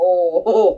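normal talking voice

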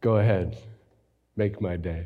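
very low, admittedly terrible movie-cop voice. Quoting a famous movie line for the audience to guess: Clint Eastwood as Dirty Harry voice. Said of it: "again, terrible impression".

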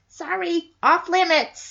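high, little voice.

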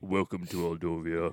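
very low, deep, scary voice. Joking about a scary character greeting visitors: deep Lurch voice. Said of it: "Aldovian Lurch".

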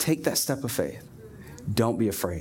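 put-on gentle voice. Acting out his words to us, imitating a gentle voice. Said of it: "Just gentle".

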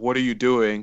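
mock soft, flat, dry, expressionless deadpan. Recounting a superhero movie scene, quoting Ronan's reply to Peter: Ronan's deadpan delivery. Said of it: "Ronan with the deadpan".

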